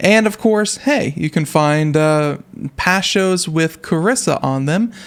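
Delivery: off-timing, slow, halting, dragged out, stumbling.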